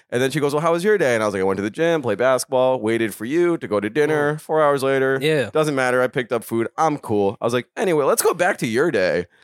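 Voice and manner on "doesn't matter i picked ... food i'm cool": ordinary delivery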